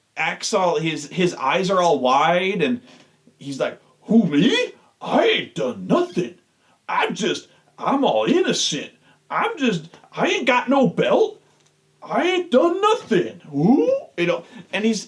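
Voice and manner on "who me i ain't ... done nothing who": exaggerated goofy voice, swooping and sing-song. Retelling how R-Truth acted innocent on commentary: exaggerated goofy R-Truth voice. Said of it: "in a really exaggerated voice".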